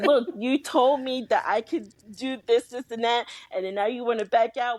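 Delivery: put-on upset, pleading, frustrated and tearful. Retelling own words to someone who backed out: retelling own frustrated tearful complaint. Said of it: "'cause I still had stuff to say in my frustration".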